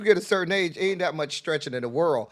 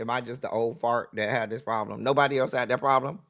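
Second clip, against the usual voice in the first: normal talking voice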